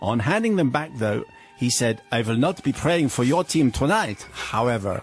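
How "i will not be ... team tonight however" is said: put-on German accent drifting toward French accent. Retelling what a german priest said after blessing the speaker's beads: german accent impression drifting french. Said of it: "it's a French at the end".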